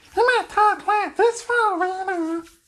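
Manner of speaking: cocky swagger voice.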